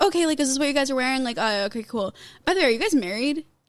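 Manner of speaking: put-on nonchalant, casual, offhand manner. Retelling what the photographer said on arrival: imitating a nonchalant photographer. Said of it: "he was so nonchalant".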